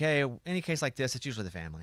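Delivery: ordinary talk, nothing marked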